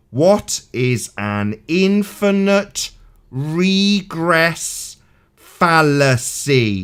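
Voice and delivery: very slow, deliberate, spoken word by word. Repeating a question to someone who misheard it: very slow. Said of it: "I'll say it really slow".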